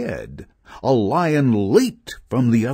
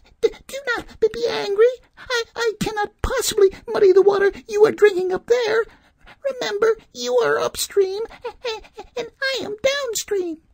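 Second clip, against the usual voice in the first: quavering, trembling, very high-pitched voice. The lamb answers the wolf who accused it of muddying the stream; trembling voice. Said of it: "replied the trembling lamb".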